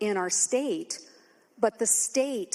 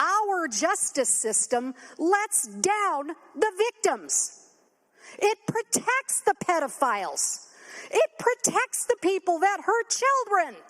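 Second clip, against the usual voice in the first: furious, very high-pitched angry outcry; 10 semitones higher, 3 dB louder than usual. Speaking on the floor to Madam Speaker about victims: angry. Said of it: "do I sound angry? Yes, I'm angry".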